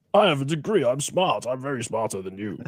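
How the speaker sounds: put-on lecturing, pontificating know-it-all character voice. Introduced as a guest who is really someone else: Sargon of Akkad impression. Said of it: "I hope Carl doesn't watch this".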